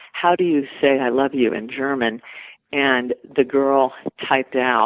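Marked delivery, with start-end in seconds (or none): none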